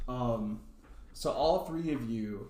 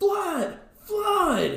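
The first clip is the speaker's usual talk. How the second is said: high, loud goblin yell. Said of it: "So this goblin yells".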